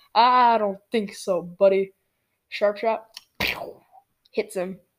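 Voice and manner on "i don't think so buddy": smooth, suave, cool scoundrel's voice. Recalling a match where a Boba Fett flew out of reach, thinking in a Lando voice. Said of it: "in a Lando voice".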